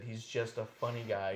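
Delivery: ordinary talk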